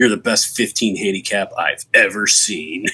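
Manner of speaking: put-on, imitated sarcastic voice. Retelling what an annoyed golf opponent said afterwards: imitating Steve's sarcastic compliment. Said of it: "I'm really good at picking up sarcasm".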